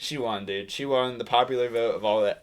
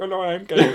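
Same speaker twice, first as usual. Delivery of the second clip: loud, high put-on Indian accent; 8 semitones higher, 6 dB louder than usual. Joking about how to impersonate an official: put-on Indian accent. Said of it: "he doesn't have an Indian accent".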